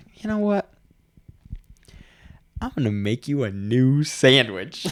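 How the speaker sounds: gentle, calm, unbothered, peaceful tone. Retelling answering a yelling customer: imitating own slow, peaceful voice. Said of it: "I just came at her with this slow, peaceful".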